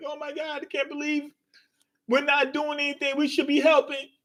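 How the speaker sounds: play-acted soft, high, tearful crying voice. A narrator describing a crewmate torn up by thorny vines, Chopper and Robin crying. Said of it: "they're just like crying".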